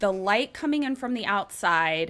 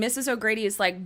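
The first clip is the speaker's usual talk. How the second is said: ordinary talk, nothing marked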